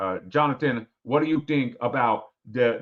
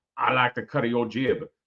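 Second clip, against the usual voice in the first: put-on Louisiana Cajun accent. Answering a viewer's super chat request, putting on a Cajun accent. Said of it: "I got to do the Cajun accent".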